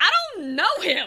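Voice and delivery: very high, very loud, shrill blurt. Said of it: "has a very good line delivery".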